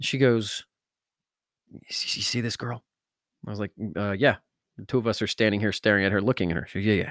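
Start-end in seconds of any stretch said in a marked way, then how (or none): 1.7-2.8 slow, hushed whispered aside. Retelling what a friend said while they both stared at a girl: retelling a whisper. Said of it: "she's like whispering".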